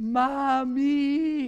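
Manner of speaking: long, drawn-out wailing cry. Retelling the moment she starts screaming for mommy: imitating her scream. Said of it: "And she starts screaming".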